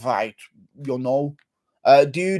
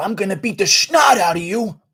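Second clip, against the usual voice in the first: high, pushed-up fighter's taunting tone; 5 semitones higher than usual. Doing a requested imitation: Ken Shamrock imitation. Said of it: "Ken Shamrock imitation".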